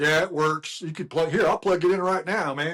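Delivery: put-on rural country accent with twang. Speaker recounting buying a Nintendo from a seller, imitating the seller's country accent. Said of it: "Where the fuck is that accent come from?".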